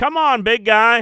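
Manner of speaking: very high, very loud, shrill put-on accented drawl. Retelling what the tech nerds said: imitating the nerds' accent. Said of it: "The fucking accent".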